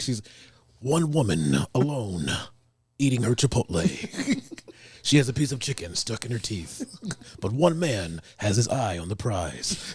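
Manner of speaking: narrator-style voice. Acting as wingman, narrating what a woman is doing, narrating. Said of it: "I'll just start narrating what she's doing".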